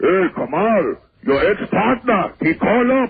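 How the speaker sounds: put-on German accent, very drawn out and slow. Retelling a phone call from a german restaurant guy: german accent. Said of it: "he starts giving me the German accent".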